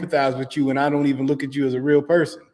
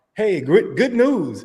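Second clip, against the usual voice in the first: mock AI voice-assistant voice, pitched higher; 5 semitones higher than usual. Retelling what the smart glasses said last night: imitating smart glasses AI voice. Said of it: "my glasses was like".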